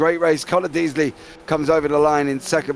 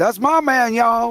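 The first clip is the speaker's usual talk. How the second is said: put-on Southern American accent, pitched up; 8 semitones higher than usual. Doing the one line that works in a put-on Southern American accent. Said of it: "I can only do the accent when I do that line".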